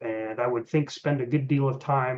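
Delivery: ordinary delivery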